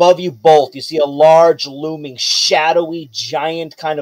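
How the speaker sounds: plain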